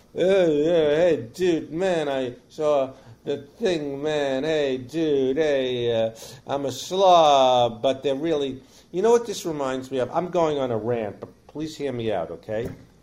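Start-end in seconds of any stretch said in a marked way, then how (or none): 0.2-7.8 very slow, lazy, slobby bro-dude drawl. Mocking the bro guys who are slobs: slobby bro dude voice. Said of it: "the bro guys that are like slobs".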